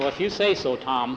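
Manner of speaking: ordinary delivery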